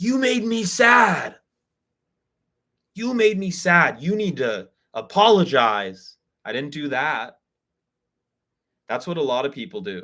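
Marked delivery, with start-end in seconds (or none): 0.0-6.2 resentful, angry, accusing, high and drawn out. Showing the wrong way to tell a friend about hurt feelings: acted angry accusation. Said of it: "I didn't approach him angry".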